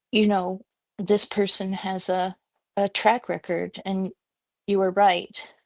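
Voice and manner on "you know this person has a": ordinary delivery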